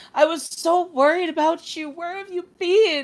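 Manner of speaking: mock crying, gasping, worried, loud and high. Retelling the mother greeting her child at the door: imitating a mother crying. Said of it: "She is crying".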